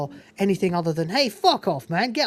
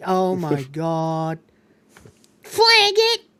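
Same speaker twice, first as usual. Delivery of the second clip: put-on annoying female voice, louder; 5 dB louder than usual. Speaker mocking a woman with an annoying voice, imitating an annoying voice. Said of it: "she's got the most annoying voice".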